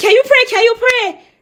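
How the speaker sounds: frantic, panicked voice, very high pitch. Retelling asking him to pray while panicking about a doctor visit, reenacting own panicked pleading. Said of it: "So I started like panicking".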